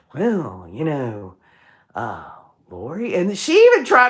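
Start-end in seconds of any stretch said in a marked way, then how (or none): 0.2-3.2 slow, tired-sounding put-on voice, lower and quieter. Imitating how the interviewer spoke to Lori: slow Keith Morrison voice. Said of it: "He sounds like he's smoked some dubage".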